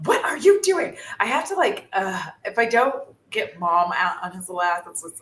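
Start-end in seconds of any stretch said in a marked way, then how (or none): 0.1-1.0 mock yelling, very high. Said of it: "you're yelling at Bo".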